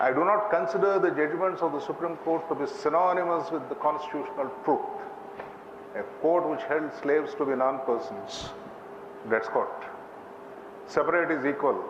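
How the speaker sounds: normal talking voice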